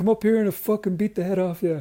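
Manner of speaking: loud high taunting. Retelling an actor taunting three young lads: Conor McGregor impression. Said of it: "really good Conor McGregor impression".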